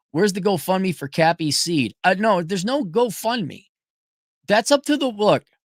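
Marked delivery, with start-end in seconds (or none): none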